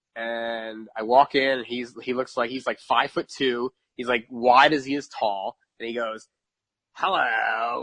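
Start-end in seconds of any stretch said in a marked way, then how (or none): 7.0-7.9 put-on old smoker's voice. Speaker retelling how a guy greeted him, old smoker's voice. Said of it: "like that old like smoker's voice".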